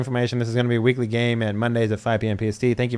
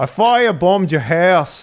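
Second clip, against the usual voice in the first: put-on, loud, high Irish accent; 6 semitones higher, 5 dB louder than usual. Explaining the one trick to doing an irish voice, the speaker demonstrates: irish accent. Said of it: "to make an Irish voice is say".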